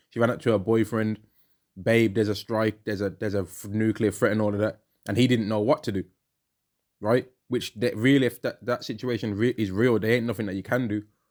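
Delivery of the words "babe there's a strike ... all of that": normal talking voice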